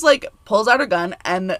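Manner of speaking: ordinary talk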